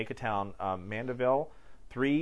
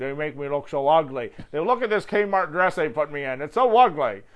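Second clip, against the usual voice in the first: very loud, funny, silly, indignant complaining voice; 4 semitones higher, 8 dB louder than usual. Imitating a man from a YouTube drag sketch, in his funny voice. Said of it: "he's got that really kind of funny voice".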